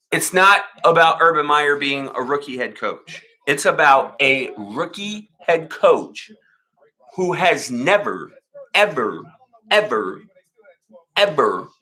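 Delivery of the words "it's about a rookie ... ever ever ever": very slow, deliberate, spelled out word by word. Speaker correcting a listener who missed his point: very slowly. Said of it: "let me say it very slowly for you".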